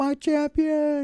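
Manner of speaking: very high, loud, sobbing tearful wail. Retelling how an older man dropped to his knees: imitating someone crying. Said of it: "starts crying like that".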